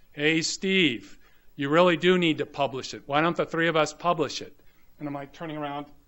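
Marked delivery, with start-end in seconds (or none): 0.2-4.6 big, loud, booming bellow. Retelling how Eric Coleman bellowed out from behind, in Eric Coleman's booming voice. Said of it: "this booming voice from behind me".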